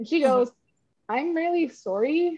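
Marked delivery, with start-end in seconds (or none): 1.1-2.4 put-on North Carolina accent. Retelling what she said to the speaker at lunch, in a North Carolina accent. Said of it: "but in a North Carolina accent".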